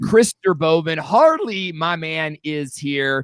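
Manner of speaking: giddy, excited voice breaking and cracking. Host greeting viewers logging in to the stream, voice cracking with giddiness. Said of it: "my voice is cracking".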